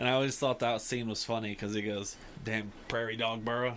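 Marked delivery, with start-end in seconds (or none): 2.4-3.8 put-on cowboy drawl. Quoting a funny scene where Earl falls into a hole, in Earl's cowboyish voice. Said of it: "He says it very like cowboyish".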